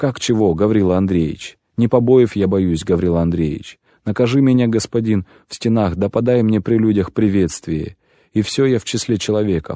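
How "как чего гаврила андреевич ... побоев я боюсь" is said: ordinary delivery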